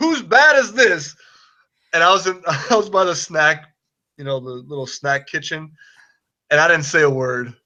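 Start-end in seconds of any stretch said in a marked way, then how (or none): 0.0-1.1 put-on raised voice, much higher in pitch. Speaker retelling a man swinging a bat that feels too heavy, raised voice. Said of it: "kind of like raises his voice and says".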